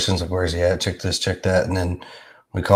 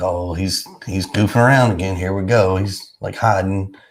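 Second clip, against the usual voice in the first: ordinary delivery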